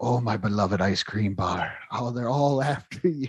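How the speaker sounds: crazed, possessive, unhinged rambling creature voice. Describing a cartoon character obsessing over an ice cream bar, Gollum-like rambling. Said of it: "like this whole like Gollum Schmeagle like rambling".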